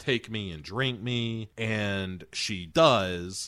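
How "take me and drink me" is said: ordinary talk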